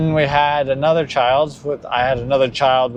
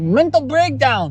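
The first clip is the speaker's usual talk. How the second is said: put-on slipping into Mexican accent, higher pitched; 12 semitones higher than usual.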